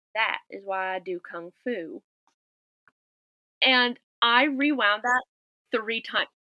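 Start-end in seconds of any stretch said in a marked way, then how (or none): 0.2-2.1 put-on broad, heavy Southern accent, very deep. Quoting a man's first line while on the phone, in a very deep southern accent. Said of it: "very, very deep Southern accent".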